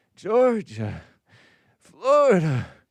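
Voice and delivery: loud, out of breath, gasping after every syllable. Reading out a viewer's message, then imitating someone: mock out of breath every syllable. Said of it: "he's just out of breath after every syllable".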